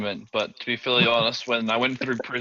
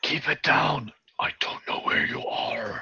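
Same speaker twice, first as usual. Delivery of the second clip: hushed, urgent whispered voice; 4 semitones higher than usual. In a role-played scene, a character speaks to someone nearby, whispering. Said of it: "I whisper".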